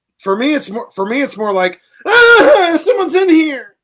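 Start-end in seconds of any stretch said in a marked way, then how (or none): 2.1-3.6 high, loud, panicked, scared cry. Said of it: "It's scary in your stall".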